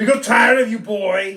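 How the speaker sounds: cheesy parody movie strongman tough-guy voice. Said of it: "I sound like my Arnold's Pizza Parlor fucking thing".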